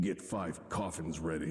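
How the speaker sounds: very low, deep, very soft, almost silent. Opening a video with an impression of Hazer. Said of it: "That was my best Hazer impression".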